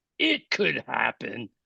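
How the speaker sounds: barely audible, rough, creaky, very quiet put-on voice. Showing the voice that she would break into, imitating her put-on voice. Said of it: "she would say it just like that".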